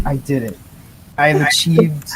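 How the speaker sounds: ordinary delivery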